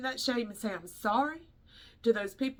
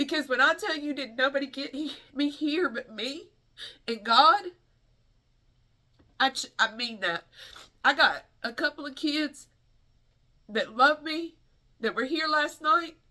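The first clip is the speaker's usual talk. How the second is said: tearful crying speech, words breaking off; 3 semitones higher, 4 dB louder than usual. Speaking to a crowd about her path and God: crying while speaking. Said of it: "Let me stop crying".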